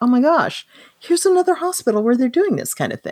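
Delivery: high, wide-ranging, stunned astonished voice.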